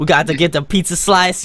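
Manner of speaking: put-on New York accent. Asked for an accent, the speaker gives a put-on New York accent. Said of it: "my uh, best like you New York accent".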